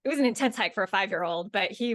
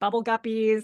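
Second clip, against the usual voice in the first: usual speaking voice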